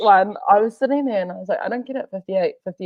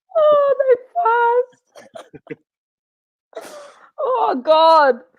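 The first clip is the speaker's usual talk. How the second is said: very high, slow crying with laughter. Repeating a joke's punchline after failing a straight face, laughing to tears while talking. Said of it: "I'm crying now".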